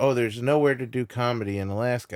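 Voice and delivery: ordinary talk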